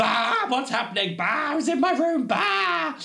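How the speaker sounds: frightened yelps climbing very high, acted out. Recounting a door opening in the pitch dark, reenacting own yelping screams. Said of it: "I yelp, scream, ... going".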